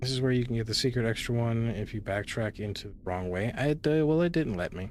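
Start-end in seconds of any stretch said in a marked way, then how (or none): 3.5-4.9 dejected, beaten-down, slightly high-pitched voice. Reacting after a game blocks a secret route: defeated. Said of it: "You sound so defeated?".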